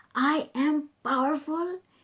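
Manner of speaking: wholehearted, firm conviction. Demonstrating to listeners how to say an affirmation: with conviction. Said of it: "Can you feel my conviction when I do this?".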